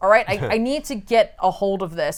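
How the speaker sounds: plain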